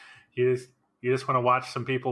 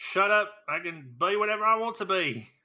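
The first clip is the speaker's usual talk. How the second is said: terrible fake British accent, pitched high; 7 semitones higher than usual. Told he isn't British, he fires back in a bad British accent. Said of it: "Not with that accent".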